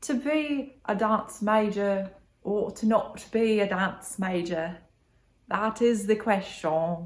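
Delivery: put-on British accent. Asking whether to be a dance major, in a British accent. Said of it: "I should do it in a British accent".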